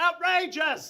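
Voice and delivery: very loud, high, shrill outraged angry shout. Voicing an angry crowd member in a gathering: angry shout from a crowd. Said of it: "you hear an occasional shout of".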